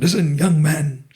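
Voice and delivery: put-on big, boisterous, hearty voice. Retelling a job call from a magazine founder: imitating Adil Jal Daru Khana wala's boisterous voice. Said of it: "He talks in this very boisterous voice".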